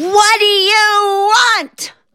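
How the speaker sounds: high-pitched, slow scream.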